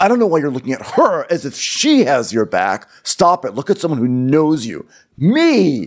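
patronizing, condescending, dismissive brushing-off tone. Retelling what Austin said after Vanita told Craig to calm down, mock-condescending. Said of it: "it was just so condescending".

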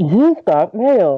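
cheerful, automated-sounding announcer voice. Asking another speaker for an impression, speaker demonstrates the AOL 'You've got mail' voice. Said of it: "Now do the AOL movie phone guy".

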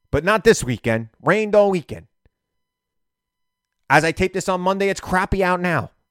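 mildly fired-up, slightly worked-up griping tone. Taping a segment on Monday, a little fired up. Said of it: "I'm a little fired up".

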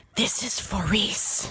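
soft, hushed whisper under the breath. A woman plunging toward the ground with the adder she stabbed, whispering. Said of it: "She brings her blade out and whispers".

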